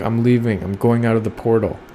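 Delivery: ordinary delivery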